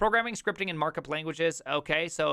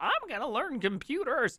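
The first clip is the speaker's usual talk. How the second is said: put-on high-pitched, elderly old-lady voice; 9 semitones higher than usual. Imagining a sixty-five-year-old classmate going back to school: eighty-four-year-old woman voice. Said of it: "an eighty-four-year-old woman voice".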